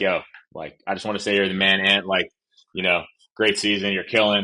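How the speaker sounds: ordinary talk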